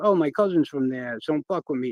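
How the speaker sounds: plain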